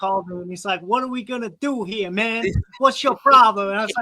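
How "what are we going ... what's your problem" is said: tough-guy Italian mobster voice, pitched up. Retelling what a man said when he called someone, in an italian mob boss voice. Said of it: "why do you sound like an Italian mob boss".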